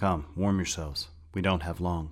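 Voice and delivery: ordinary delivery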